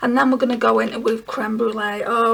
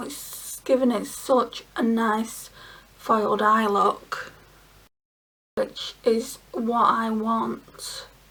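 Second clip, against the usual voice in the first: very slow, deliberate, drawn-out speech; 5 dB quieter than usual. Describing the foiled eye look being applied, talking slowly. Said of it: "Don't know why I'm talking slow like that".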